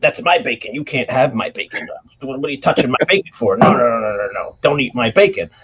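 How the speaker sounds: acted defensive tone. Retelling a fight while cooking, speaker acts out how he got defensive. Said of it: "he got all defensive".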